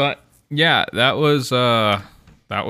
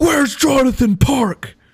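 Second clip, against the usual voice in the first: put-on very high, repeated calling-out holler; 4 dB louder than usual. Retelling a friend in a parking lot: imitating someone yelling. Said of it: "yelling, yelling".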